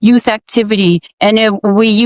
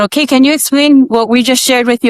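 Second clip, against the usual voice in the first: ordinary talk, nothing marked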